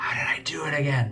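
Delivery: speaking in a whisper. Asking Bruce in character how to do it again: whispering. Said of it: "I'm whispering to Bruce".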